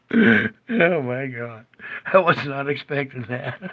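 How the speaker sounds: speaking through laughter. Presenter reacting to a clip just shown, laughing. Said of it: "Sorry, I'm laughing".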